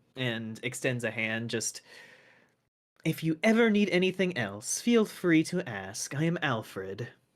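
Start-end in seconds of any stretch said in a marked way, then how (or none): 3.0-7.0 fully in-character fiend monster voice. Voicing a bowing Arcanoloth offering help: voicing the Arcanoloth Alfred. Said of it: "the Arcanoloth just, like, bows a little bit".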